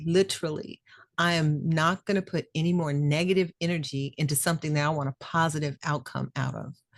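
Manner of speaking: plain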